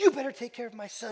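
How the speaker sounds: loud, high yelling. Retelling how the mother dropped him off: imitating mother yelling. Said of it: "she'd yell at him every time".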